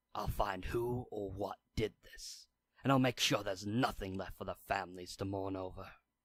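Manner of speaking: furious whisper. A man who stormed off alone after a funeral mutters a vow in a furious whisper. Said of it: "and a man sitting in the back, hiding his face beneath a mask. / and a man sitting in the back, / He whispers, / the masked man storms off alone in a fury".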